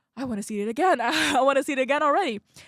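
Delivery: fast, loud, giddy, laughing, excited gushing.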